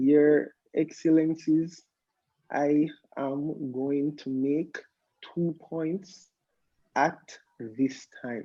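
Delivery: very slow, formal, word-by-word official speech. Speaker demonstrates how he thinks he sounds when mooting, very slow, formal address. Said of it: "let me tell you guys how I think I sound when I'm muting".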